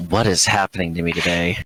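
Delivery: grumbling, mumbled under one's breath. A player voices their character noticing something odd about Iris, muttering under breath. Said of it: "I'm just gonna mutter under my breath".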